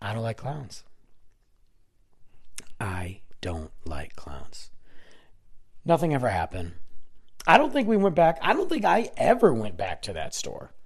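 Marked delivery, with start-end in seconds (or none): 2.8-4.7 quiet, slow whispering. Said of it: "repeated as a whisper".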